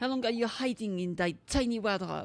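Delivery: put-on accidental French accent creeping in. Voicing a game character who finds someone hiding: accidental french accent. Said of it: "my accent just becomes French for no reason".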